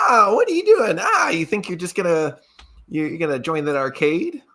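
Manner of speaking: cheeky taunting little creature. A little creature floats down and taunts the character, sassy taunting creature. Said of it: "He's clearly like kind of like sassy".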